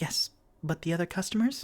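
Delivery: hushed, high-pitched whisper. Voicing a character who whispers back through a spell: whispering. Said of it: "she whispers".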